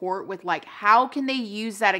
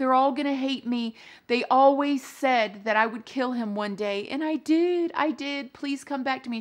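mock tearful crying, begging tone; 4 semitones higher than usual. Retelling what a woman said after he fell out the window, imitating her crying and begging. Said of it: "she's like crying and begging".

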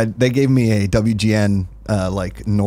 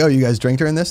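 plain

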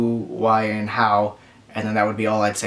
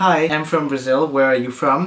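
normal talking voice

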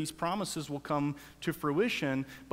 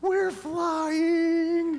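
put-on, shrill, full-lung, very high, loud happy scream; 13 semitones higher, 6 dB louder than usual. On a plane, retelling what he screamed, retelling a scream at top of lungs. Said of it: "he screams at the top of his lungs".

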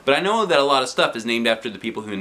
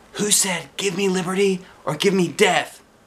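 much higher whisper; 8 semitones higher than usual. During a test, the narrator leans over to Alexia: whispered. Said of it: "I whispered".

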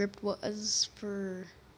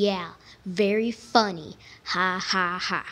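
mocking, slow, sarcastic drawl; 5 dB louder than usual. Recording a list of lines in set styles: sarcastic. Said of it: "first one is sarcastically".

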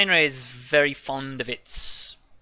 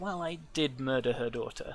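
low, hushed, quiet murmur; 9 dB quieter than usual. Retelling what a woman said after lowering her voice, in the same low tone. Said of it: "in the same low tone".

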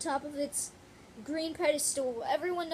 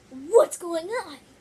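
booming cartoon voice, belted out; 2 semitones higher, 12 dB louder than usual. Showing their Knuckles setup on camera, the speaker tries out a Knuckles voice. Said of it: "here's Knuckles' voice".

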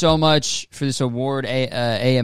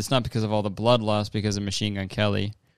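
plain

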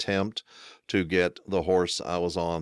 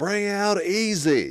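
mock, very high, drawn-out hollered call; 5 dB louder than usual. Retelling how a smirking guy yelled after hearing the speaker fell off a horse, retelling a yell. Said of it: "guy kind of smirked and he yells".

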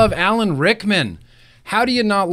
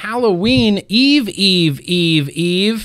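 usual speaking voice

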